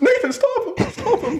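very high, hysterical laughing plea.

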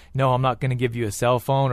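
normal talking voice

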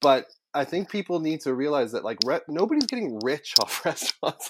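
talking through laughter.

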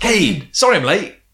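high, really happy and cheerful. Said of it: "she's really happy, like, cheerful".

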